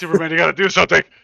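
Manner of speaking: high, fast, loud panicked shout.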